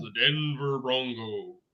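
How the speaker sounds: soft, epic sports-film narrator voice. Announcing a Steelers versus Broncos playoff matchup, NFL Legends voice. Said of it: "using my N F L Legends voice".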